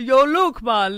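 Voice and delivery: put-on Jamaican accent. Showing how people will address someone named luke, in a jamaican accent. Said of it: "Why is he Jamaican?".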